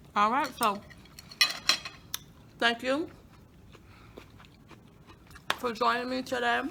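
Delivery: speaking with mouth full, chewing. Tasting the food, the host thanks viewers for joining, talking with mouth full. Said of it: "I'm talking with my mouth full".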